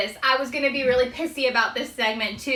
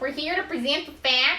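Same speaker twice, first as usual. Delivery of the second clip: thick, exaggerated Midwestern accent, higher pitch; 3 semitones higher than usual. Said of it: "Kick up your Minnesota ac-, your Midwest accent a little bit more".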